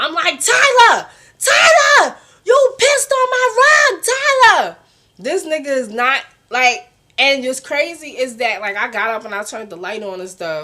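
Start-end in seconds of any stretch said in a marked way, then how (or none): 0.4-4.8 shrill, high, drawn-out scream at full volume. Retelling waking someone who peed on the rug: retelling screaming a name. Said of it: "So I'm screaming his name".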